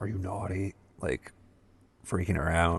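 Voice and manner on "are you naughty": whispered, quieter. Retelling how a character asks a little girl on his lap: imitating a whisper.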